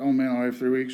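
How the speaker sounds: plain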